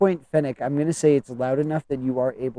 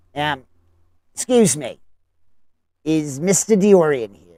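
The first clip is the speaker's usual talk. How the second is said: raised, rasping, rodent-like voice; 2 semitones higher, 5 dB louder than usual. A newcomer asks whether mister diorian is here: raspy, rat-like voice. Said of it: "raspy in a sense, almost rat-like".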